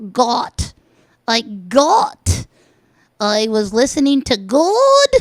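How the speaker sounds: very slow, loud, swooping, mannered, affected put-on delivery. Mocking how the recipe video host talks: imitating Amy's way of talking. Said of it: "It's just like how she says".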